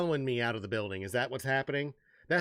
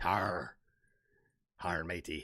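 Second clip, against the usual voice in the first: put-on pirate voice, much lower pitch; 7 semitones lower, 5 dB quieter than usual. Voicing a creature the speaker calls a pirate demon, pirate voice. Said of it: "What is he, a pirate?".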